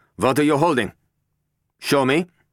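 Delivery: very high, loud, insistent, demanding tone. Klein, pointing a gun at Venture, confronts him: demanding. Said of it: "Klein demanded".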